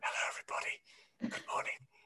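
soft, hushed whisper. Greeting a noisy class to calm it down, whispering. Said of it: "and so I started whispering".

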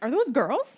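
mock all-excited, eager, loud tone. Retelling a show scene where Sam sees the village women: imitating excited Sam. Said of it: "All excited".

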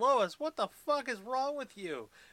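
shrill, very high-pitched, loud shout. Acting out a character calling down from a high window, shouting as Clark. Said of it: "I'm shouting quite loudly".

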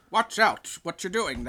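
put-on booming robot voice with a British-ish accent. Describing a British-y robot character with a monocle; British-ish robot voice. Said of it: "he's kind of like British-y".

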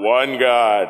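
low, deep, intoned film-narrator voice.

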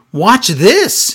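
mock loud, high show-off yell. Recapping a short match, quoting Aaliyah calling out to Robert Stone; retelling a yell. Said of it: "Aaliyah yells to him".

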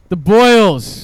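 loud yelling straight into the microphone. On a radio show, calling out into the microphone, yelling into the mic. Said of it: "Stop yelling in the mic".

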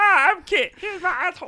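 put-on pet cat voice. Voicing a cat named Kit in a put-on voice. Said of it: "I like the voice".

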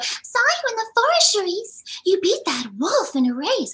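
very high-pitched character voice. Showing one of the voices done for a kids' series: Kitty Cheshire voice. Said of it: "my voices that I do is Kitty Cheshire".

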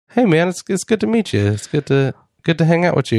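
meek, polite, gentle, mild-mannered, easygoing friendly voice. Imagining meeting a wrestler named Kevin Owens: soft-spoken Kevin Owens. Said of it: "real soft-spoken".

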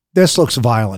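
mock dry, low, deadpan delivery. Recounting what a woman said on reaching the speaker's table, retelling a deadpan remark. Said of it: "she looked at me deadpan in the eye".

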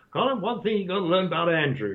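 put-on American accent. Quoting a man who announces he'll put on his American accent: American accent. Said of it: "I'm going to put on my American accent now".

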